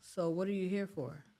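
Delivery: ordinary talk, nothing marked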